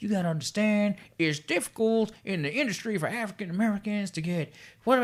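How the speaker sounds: put-on Southern accent. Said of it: "I don't know why I sound like a Southern redneck".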